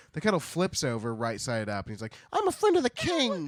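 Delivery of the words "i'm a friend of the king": very high, loud, squeaky, shrill cartoon mouse voice. Retelling a story, the speaker voices the tin kettle talking, in a cartoon mouse voice. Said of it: "when mice in cartoons are like".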